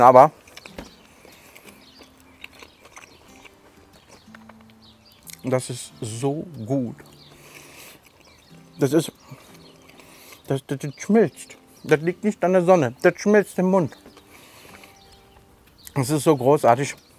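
talking with mouth full. Tasting a burger in a cooking video, talking to viewers: talking with mouth full. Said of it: "man soll ja mit vollem Mund nicht reden".

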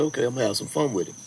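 plain

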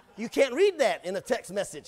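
ordinary talk

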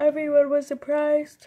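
speaking through a yawn. Showing a bag to viewers on camera, speaking while yawning. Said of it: "Sorry, I'm yawning".

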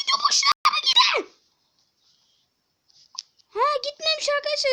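high-pitched, excited yelling. Playing a game on stream and talking to viewers, yelling. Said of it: "Özür dilerim bağırdığım için".

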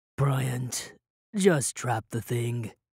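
weary, worn-out, tired, low voice. [name] speaks to Bryant, who has just leapt up screaming: tired. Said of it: "[name] said tiredly".

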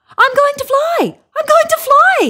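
very high, loud, shrill shrieking cry. Emu, about to be taught to flap his wings by Earl Grey, shrieking. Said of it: "shrieked Emu".

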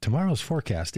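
gentle, soothing smart-speaker voice-assistant tone. Speaker retells the Alexa device giving the weather forecast: soothing Alexa voice. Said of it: "in just that such soothing tones".

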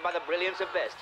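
plain

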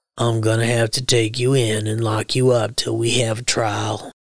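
calm, even, measured, low, steady delivery. Reading a story, the sheriff speaks to Yancey before a crowd: low, steady voice. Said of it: "he said in a low, steady voice".

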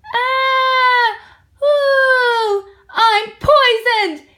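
long, very high, very slow wail. Narrator reads the dingo right after tasting the stew, howling. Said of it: "He howled".

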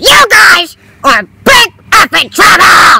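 worked up, riled, agitated, loud and drawn out. Playing a character scolding the others after they stole lunch, agitated. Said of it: "you need to calm down".

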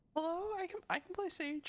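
fake, mock female voice. A player talks to others in a game chat, in a fake female voice. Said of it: "he's talking in a fake female voice".

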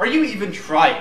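high, loud, exasperated, angry yelling rant.

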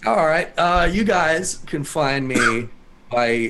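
sick, hoarse voice, loud and slow.

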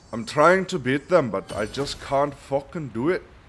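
sudden slide into loud, high Scottish accent. Complaining about failing to beat enemies in a game: Scottish accent. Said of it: "all of a sudden turned Scottish".

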